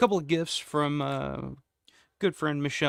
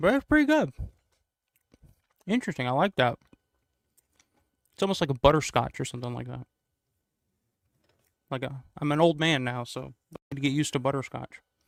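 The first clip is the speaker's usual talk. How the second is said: speaking with hard candy in mouth. Tasting a gift candy and describing its flavor, talking with hard candy in mouth.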